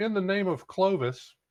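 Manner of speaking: high, shouted rallying cry in character. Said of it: "What Reginald would like to do is shout".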